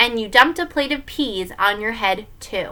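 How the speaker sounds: ordinary delivery, nothing marked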